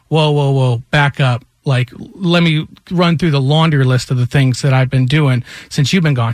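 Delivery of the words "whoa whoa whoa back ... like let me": ordinary delivery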